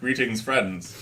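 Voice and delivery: put-on British accent in an announcer-style voice. Joking about a British voice introducing their episodes: put-on British voice. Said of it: "the British voice introduce all our episodes".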